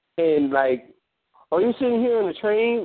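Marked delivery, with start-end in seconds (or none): 1.5-2.9 high, mocking, taunting tone. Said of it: "they were, like, mocking her".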